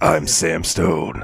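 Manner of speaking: deep, rough voice. Describing a game hero's unchanged voice, gruff Sam Stone voice. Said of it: "he's still got the same voice where he's like".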